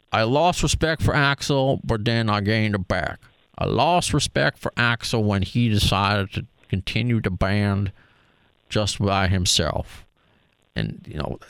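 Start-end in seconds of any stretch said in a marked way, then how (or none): 0.1-10.0 put-on Southern US accent of an old country man. Quoting a man he is describing, in a put-on southern accent. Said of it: "I don't know if I'm doing a good uh, southern accent".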